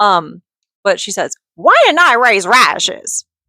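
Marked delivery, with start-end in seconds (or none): 1.5-3.2 silly, high, swooping put-on voice. Quoting a character from a good book, in a funny put-on character voice. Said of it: "it's just such a funny voice".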